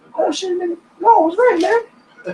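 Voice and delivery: panicked, high-pitched cry.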